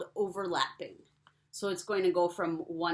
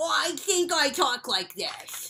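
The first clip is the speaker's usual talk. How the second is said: high-pitched little penguin puppet character voice; 8 semitones higher, 5 dB louder than usual. Speaker showing how to invent a voice for a penguin, as Pete the penguin. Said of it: "so that's how Petey talks".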